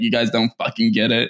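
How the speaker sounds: ordinary talk, nothing marked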